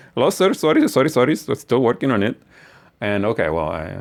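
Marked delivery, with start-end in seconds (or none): 0.1-2.3 mock Indian-accented voice. Imitating a website vendor from India answering a customer, in a put-on Indian accent. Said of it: "it's my Indian accent".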